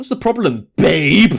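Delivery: threatening tone in every word. Reading a game character's line to Jaylene aloud: menacing voice. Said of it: "she says it in that menacing voice".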